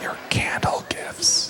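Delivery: very soft, hushed whisper under the breath. Thanking the audience for gifts, then naming them: whispering.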